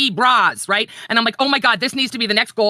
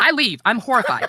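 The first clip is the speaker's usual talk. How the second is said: ordinary delivery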